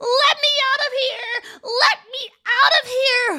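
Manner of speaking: very high, very loud, drawn-out shrieking scream. Narrator reads a locked-in old woman's line, screaming. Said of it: "The old woman screamed".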